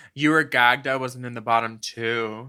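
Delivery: driest, deepest possible deadpan delivery. Retelling a line from another person: imitating driest, deepest voice. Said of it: "just in the driest, deepest voice".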